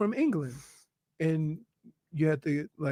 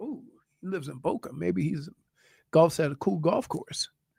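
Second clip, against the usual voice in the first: plain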